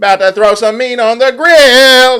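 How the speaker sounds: cheeky sass, shrill, very high and loud. Imagining walking in and greeting someone like this: sassy, tone going up. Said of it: "why did my tone just go up? ... I had to be sassy when I said that".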